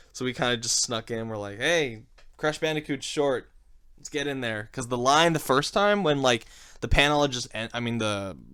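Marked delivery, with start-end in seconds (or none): none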